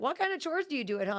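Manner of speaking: put-on sarcastic tone. Retelling a question to a seventeen-year-old kid: imitating own sarcastic question. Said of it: "that's where the little sarcasm comes in".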